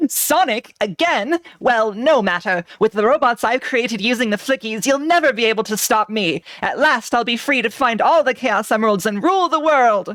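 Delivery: scheming, plotting cartoon villain voice. Acting out a Sonic scene, speaking in your Robotnik voice. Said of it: "your your your Robotnik voice this week".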